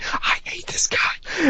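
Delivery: high, soft, frustrated whisper.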